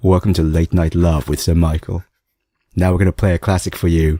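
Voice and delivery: husky late-night radio voice. Doing a mock late-night radio show intro, husky late-night radio voice. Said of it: "I've got this husky radio voice now as well".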